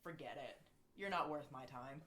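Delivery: ice-cold, icy, dismissive tone. Voicing a fighter who turns down a challenge: cold dismissal. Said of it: "staring at you dead cold in the eyes".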